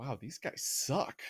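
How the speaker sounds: hushed, leaning-in whisper. Retelling a friend at an orchestra concert leaning over: whispering. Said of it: "she leans over and whispers".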